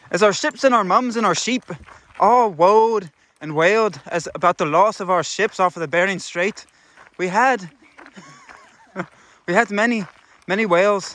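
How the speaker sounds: put-on Irish accent throughout. Joking on a trail walk about who does a better Irish accent: put-on Irish accent. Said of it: "who does a better Irish accent".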